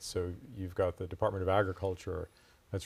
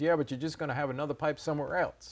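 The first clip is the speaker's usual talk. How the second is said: put-on higher-pitched voice with Midwestern accent; 8 semitones higher than usual. Retelling a committee member's reply on a phone call, midwestern accent. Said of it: "he had a great Midwestern accent".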